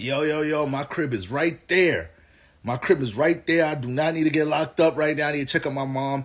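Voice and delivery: yelling, high-pitched. Retelling yelling at an oncoming swat team: imitating own yelling. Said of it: "yelling at them".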